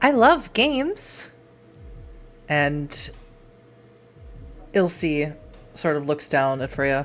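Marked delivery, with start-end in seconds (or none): 0.0-1.3 very high, otherworldly fae-like fairy voice. An unseen voice speaks up as a game is about to be played: Fae-like voice. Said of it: "you hear a very almost Fae-like voice".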